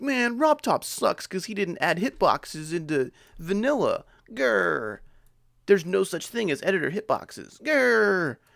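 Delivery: high, slow, mock angry grumpy rant. Answering a chat that yells about hitboxes: mock angry complaining. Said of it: "It's not like I'm like".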